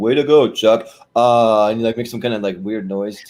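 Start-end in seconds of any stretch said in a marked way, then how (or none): 0.0-0.9 super deep, louder monotone voice. Retelling how Hader praised a correct prediction, in a deep monotone Hader voice. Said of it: "super deep, like monotone".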